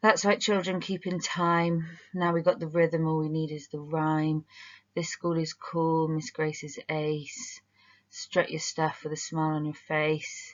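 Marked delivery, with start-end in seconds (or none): 4.9-10.5 dull, lifeless, flat, bored monotone. Reading a school rhyme aloud, flat bored reading. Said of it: "I felt bored even reading it like that".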